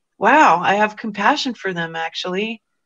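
ordinary talk, nothing marked

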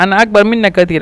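ordinary delivery

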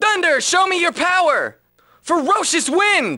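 high, breaking, cracking voice, drawn out. Saying the line again after warning that your voice will break: voice breaking. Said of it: "My voice is gonna break".

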